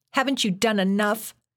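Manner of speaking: very high, screamed, high-pitched shriek. She screams at James after he grabs her by the neck, screaming. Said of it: "she screamed".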